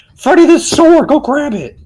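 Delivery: urgent, loud, high-pitched shout. Calling out urgently to a companion in the game: shouting. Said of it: "even though I'm shouting".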